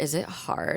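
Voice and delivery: quiet, slow whisper. Retelling what she asked a woman about a class: whispering. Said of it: "I like whispered to her".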